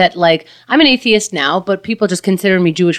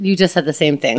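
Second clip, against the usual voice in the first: ordinary delivery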